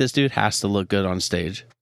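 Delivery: ordinary delivery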